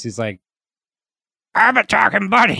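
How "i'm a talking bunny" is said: croaky, high, rough put-on bunny voice. Quoting the talking bunny's line from the episode in Bobcat's voice. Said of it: "I'll do the voice".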